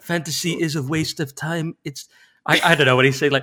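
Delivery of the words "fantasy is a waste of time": slow, drawn-out, every word deliberate. Acting out Herzog in an imagined reality show: Werner Herzog impression. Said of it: "he says".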